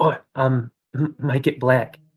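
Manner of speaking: slow half-whisper, under the breath. A player voices his character noticing the metal, half-whispering under breath. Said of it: "whispers under his breath".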